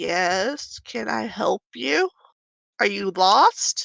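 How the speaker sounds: tiny, small, timid voice, drawn-out "yes". Voicing a human guard who meets the group, in a small voice. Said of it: "in a s- small, small voice".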